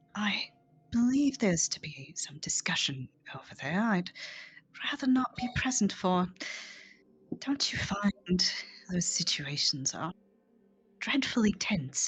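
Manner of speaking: discreet, quiet, confiding aside. Voicing Shalelu as she looks around and speaks to a player, speaking very quietly. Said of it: "very quietly says".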